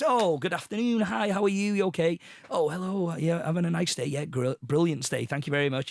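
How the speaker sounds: mock self-assured, confident, owns-the-place manner. Retelling walking into a hotel: acting like he owned the place. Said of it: "acted like I owned the place".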